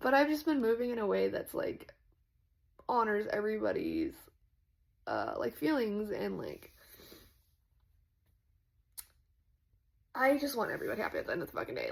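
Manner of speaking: slightly emotional, sincere, swooping voice. Continuing after apologizing for getting a little emotional: a little emotional. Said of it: "I got a little emotional".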